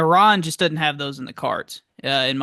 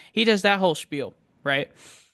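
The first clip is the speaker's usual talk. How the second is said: normal talking voice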